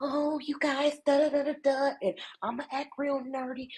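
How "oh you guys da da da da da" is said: put-on ditzy little voice, much higher, slower. Criticizing a woman she says uses colorism, the speaker mocks her ditzy little voice. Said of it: "ditzy little voice".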